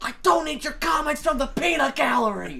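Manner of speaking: high, full-force, top-of-the-lungs mock man scream. Recounting a man outside the building yelling at another man, retelling a man screaming. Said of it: "This guy screaming at the top of his lungs to another man".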